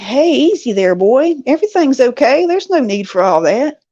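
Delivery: play-acted calm, easy, gentle, soothing tone. Retelling a young man's words to a fierce dog: imitating a calm voice. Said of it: "he very calmly says to the dog".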